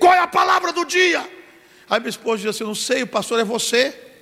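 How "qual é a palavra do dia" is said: put-on, very high, shouted holler. A pastor retelling getting out of bed this morning, retelling a shout. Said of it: "hoje eu levantei e gritei".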